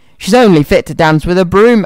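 ordinary delivery

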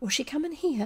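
panic-stricken whisper. Reading a story aloud, a character whispers back in the darkness: panicked whisper. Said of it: "whispered back, panic-stricken".

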